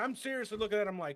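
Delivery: normal talking voice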